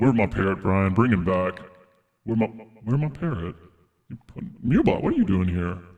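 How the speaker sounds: deep, low-pitched voice. Playing Tiny Brian, who asks where his parrot is: deep voice. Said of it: "I've got a deep voice now".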